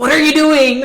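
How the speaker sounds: loud, high, blurted, mock incredulous outburst.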